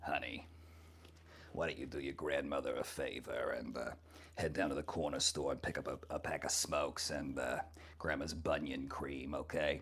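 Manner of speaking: very low, hushed put-on voice. Introducing a character on the mic, performing the Grandma character voice. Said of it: "but the character is Grandma".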